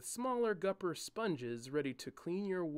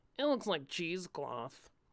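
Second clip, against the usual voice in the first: nerdy voice through the nose. Narrator reading Julian repeating Cairo's words back, in a mocking nasal voice. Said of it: "spoke with a nasal in his voice".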